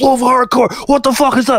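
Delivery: play-acted, very high, wild, shrieked yell. Retelling the bass player yelling at the start: imitating someone yelling. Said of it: "everyone, like, yelling, like".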